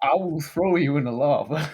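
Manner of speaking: loud, put-on Texan accent. Speaking in character during a role-play game, in a Texan accent. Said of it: "that is my uh, my Texan accent".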